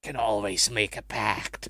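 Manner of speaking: low, devilish, tempting, demonic voice. Leaning in and half-whispering into someone's ear: mock demonic half-whisper. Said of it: "whispers into the ear in his mock demonic voice".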